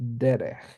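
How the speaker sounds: derech with first syllable de leaned on. Noting an exception to the usual stress: stress on first syllable of derech. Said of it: "the stress comes on the first syllable".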